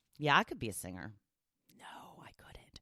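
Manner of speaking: hushed whisper. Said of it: "sorry I whispered".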